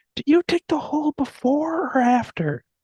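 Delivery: put-on shrill yell, very high. Retelling a scene from the Up movie: imitating Russell yelling. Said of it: "yelling to Carl".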